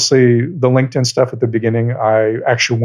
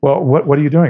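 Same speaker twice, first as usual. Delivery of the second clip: put-on panicked, freaking-out voice, higher; 3 semitones higher than usual. Retelling a prank call, voicing the caller: imitating someone freaking out. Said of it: "he's beginning to freak out".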